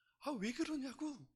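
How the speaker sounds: high-pitched, slow, startled cry. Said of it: "놀래가지고".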